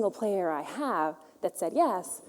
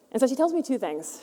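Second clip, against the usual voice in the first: ordinary talk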